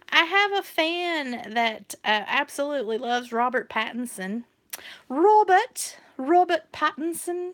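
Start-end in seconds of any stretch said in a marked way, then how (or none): 5.1-7.5 horrible, put-on, pitched-up fake British accent. Saying a celebrity's name for a fan in a horrible british accent. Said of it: "please ignore my horrible British accent".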